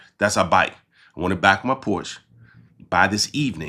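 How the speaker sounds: ordinary talk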